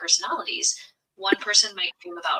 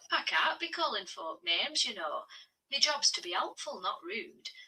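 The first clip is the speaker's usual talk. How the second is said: very quiet, soft, hushed Yorkshire dialect; 2 semitones higher, 10 dB quieter than usual. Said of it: "in your, your Yorkshire accent".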